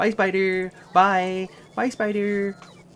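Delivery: shrill, very high, very loud blaring cartoon voice. Explaining why they said bye in a funny voice, sounding like Alan. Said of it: "sounded like Alan when he goes".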